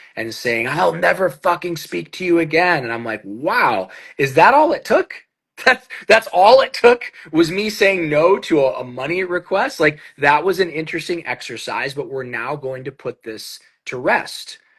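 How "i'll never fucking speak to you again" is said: mock furious outburst, high-pitched. Retelling how Dad screamed at them after a refused money request, imitating angry screaming. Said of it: "blowing the fuck up and screaming at me".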